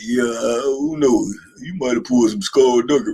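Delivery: put-on deep, low, slow voice. Retelling a man questioning where a word came from, deep slow voice. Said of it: "He got a real deep, slow voice".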